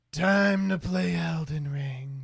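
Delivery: airy, breathy voice. Imagining a VTuber who smoked a pack a day for twenty years: breathy voice. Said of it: "they're very breathy".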